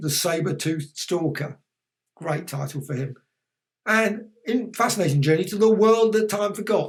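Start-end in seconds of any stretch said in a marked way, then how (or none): none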